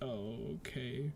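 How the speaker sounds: dejected, downcast, depressed, low and soft. Describing Yorn walking over and looking at the ground, acting out a depressed reply. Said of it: "kind of like all depressed at this point".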